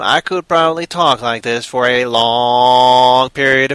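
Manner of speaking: long, drawn-out robotic alien voice. Speaker shows how long they could keep talking in a Dalek voice. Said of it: "exterminate Dalek talent accent".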